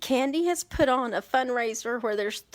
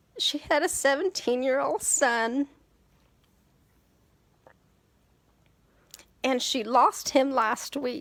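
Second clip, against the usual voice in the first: tearful voice, close to crying. Telling viewers about a fundraiser for a mother who lost her son, near tears. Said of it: "I have like tears in my eyes right now".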